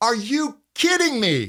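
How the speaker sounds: outraged, high, swooping indignant disbelief. Demonstrating an animated voice exercise for listeners to repeat: indignant. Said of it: "or get indignant".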